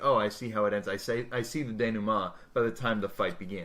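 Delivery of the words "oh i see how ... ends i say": plain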